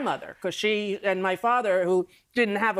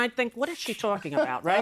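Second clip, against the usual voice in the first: usual speaking voice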